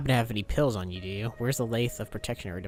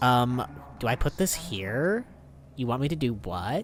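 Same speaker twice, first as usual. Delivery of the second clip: put-on Valley Girl accent. Recounting a woman who spoke that way, imitating her Valley Girl accent. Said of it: "she had the Valley Girl accent".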